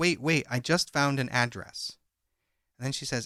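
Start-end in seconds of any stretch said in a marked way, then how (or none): none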